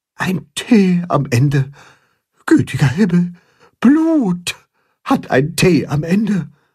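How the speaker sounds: teeth-chattering whisper. Narrator voicing Grimm reacting to writing that ends in T: whispering, teeth chattering. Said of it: "flüstert Grimm zähneklappernd".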